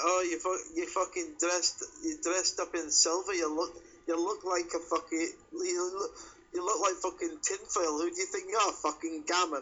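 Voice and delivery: put-on furious, ranting delivery in a Scottish accent. Retelling a favourite Call of Duty video: imitating a ranting Scottish gamer. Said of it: "Ranting Scottish guys on Call of Duty".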